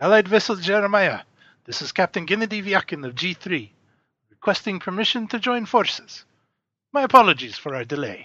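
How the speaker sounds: put-on heavy Russian accent. Voicing a captain hailing the allied vessel over the loudspeaker, heavy Russian accent. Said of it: "a voice with a heavy Russian accent".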